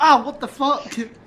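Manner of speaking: loud, high-pitched, startled yell.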